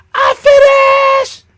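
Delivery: put-on very high, very loud child's scream, long "i". Retelling what the little brother always said: imitating a child screaming. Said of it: "And he was screaming".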